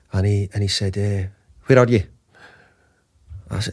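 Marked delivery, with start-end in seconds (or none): 0.9-2.0 put-on Scottish accent. Retelling a phone call from the manager: poor Sir Alex Ferguson accent. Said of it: "that's a poor Sir Alex accent".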